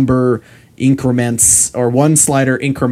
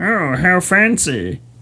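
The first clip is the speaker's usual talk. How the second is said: higher-pitched puppet frog character voice; 7 semitones higher than usual. Imagining someone's reaction to clever code, the speaker uses a Kermit-like Muppet voice. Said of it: "I'm sorry about that voice".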